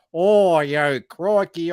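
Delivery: loud, fake, completely off Australian accent. Mocking how the Simpsons did Australians as a joke, in a bad Australian accent. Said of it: "they did that Australian".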